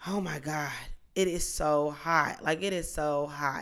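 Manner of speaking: slow, drawn-out, repeated griping. Retelling complaining with a friend about the heat: imitating own past complaining. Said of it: "complaining about how hot it was".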